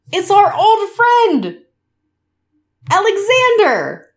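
grand, fond, high, slow, drawn-out delivery.

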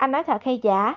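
plain

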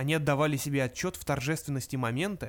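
ordinary delivery

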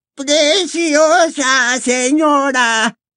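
squeaky, high little voice. Reading aloud, Hokey the elf answers Hepzibah: squeaky Hokey voice. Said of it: "dijo Hokey con voz chillona".

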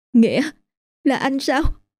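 composure slipping. An old woman answers a voice calling out to her, losing composure. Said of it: "giọng nói có phần mất bình tĩnh".

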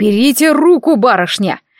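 sharp, snapping, barked delivery. Narrator reads a man suddenly snapping at a young lady: barking. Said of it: "вдруг рявкнул".

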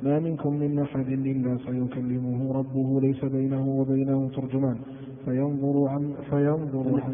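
ordinary talk, nothing marked

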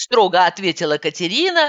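ordinary delivery, nothing marked

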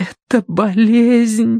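trembling, quivering whisper. Kivrin, pressing her palm over her mouth, trembling whisper. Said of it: "Дрожащим голосом прошептала Киврин".

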